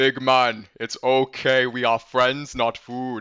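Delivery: very slow, put-on giant voice. Stepping up close and looking up at him, in Hill Giant dialect voice. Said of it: "in my best um giant dialect".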